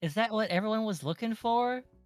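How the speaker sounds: very high, feigned innocent, playing-dumb tone. Asking a question in character at the table: playing dumb. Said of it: "Are you playing dumb".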